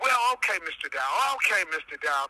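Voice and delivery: mocking, humoring sarcastic tone. Retelling a phone call with a journalist: imitating a sarcastic journalist. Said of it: "she was real sarcastic over the phone".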